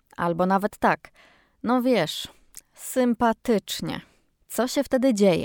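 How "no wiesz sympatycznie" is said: unimpressed, underwhelmed, lukewarm tone. Answering how the party was, flat unimpressed 'sympatycznie'. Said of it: "tonem głosu nadamy temu słowu znaczenie wręcz odwrotne".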